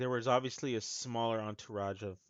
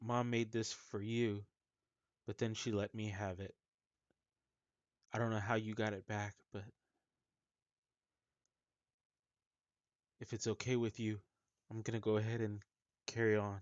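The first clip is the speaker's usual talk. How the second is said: voice choking up with grief. Voicing Percival Lax grieving over a fallen brother's sword: choked up with grief. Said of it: "he's really choking up over Bar Ethel".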